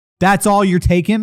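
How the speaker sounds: pissed-off parent voice. Retelling a dad's complaint at dinner: imitating an angry parent. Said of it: "they'll get pissed off".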